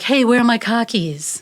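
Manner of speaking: born-and-bred Boston speech. Joking about how people hear the way he talks, boston accent. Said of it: "the Boston accent is like".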